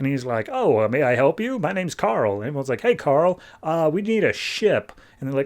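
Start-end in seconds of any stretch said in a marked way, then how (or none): 0.5-2.4 machine-like robot computer voice. Retelling a scene, speaker voices Carl greeting the group in a computerish voice. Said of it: "he speaks with a very computerish voice".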